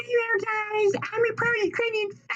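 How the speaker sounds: voice pushed very high. Showing the others how high their voice can get, in a high-pitched voice. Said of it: "My voice can get pretty high pitched too".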